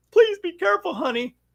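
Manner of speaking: high-pitched, worried movie-wife voice. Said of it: "the wife is worried and says".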